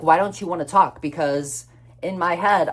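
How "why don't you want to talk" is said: mock-irritated, put-on annoyance. Retelling what the speaker asked him when he refused to call, retelling an annoyed question. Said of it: "it like pissed me off so bad".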